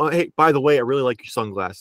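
usual speaking voice

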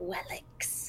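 scornful, derisive, barely whispered spider voice. Voicing a giant spider answering about who sent them, derisive spider voice. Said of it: "if a spider could talk with derision in its voice, it just did".

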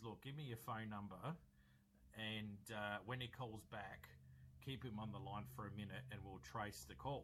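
ordinary delivery

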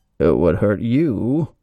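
loud, booming villain voice, as if behind a mask. Quoting a movie villain's reply in a scene: Bane impersonation. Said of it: "That's my Bane impersonation".

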